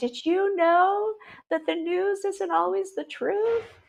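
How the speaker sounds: very high voice, crying and sobbing through words. Retelling calling a parent after a distressing lecture: retelling own sobbing question. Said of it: "I was sobbing, crying. I'm like".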